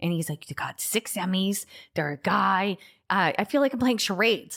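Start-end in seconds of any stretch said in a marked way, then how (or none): 0.5-2.8 New York cab driver voice. Complaining that Rob won't say who it is, imitating Rob as a New York cabbie. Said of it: "why am I like a cab driver who smokes a cigar in New York".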